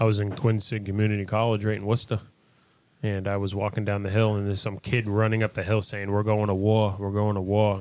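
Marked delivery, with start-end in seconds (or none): none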